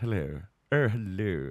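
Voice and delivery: very posh, laid-on upper-crust English accent. Speaker tries out accents, showing a very posh english accent. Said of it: "I can do a very posh English accent".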